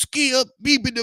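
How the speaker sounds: very high, derisive, dismissive gibberish babble. Mocking how a show host talks: mocking Shannon Sharpe's talk. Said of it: "stop talking like that".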